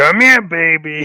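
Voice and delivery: put-on pirate-style accent. Quoting a droid babysitting a character: imitating a pirate accent. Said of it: "With his, like, pirate accent".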